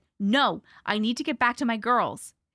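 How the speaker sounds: firm, insistent, increasingly firm delivery. Narrator answers a woman offering soup, firmly. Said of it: "More firmly this time".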